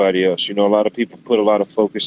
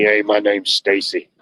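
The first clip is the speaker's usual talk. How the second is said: put-on old, raspy construction-worker voice, much slower. Retelling how a chain-smoking man introduced himself; imitating Stacy's raspy voice. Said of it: "like that old raspy, like construction worker voice".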